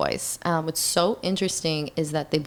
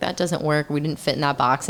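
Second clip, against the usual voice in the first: ordinary talk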